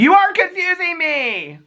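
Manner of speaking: mock wail, very high and slow, near tears.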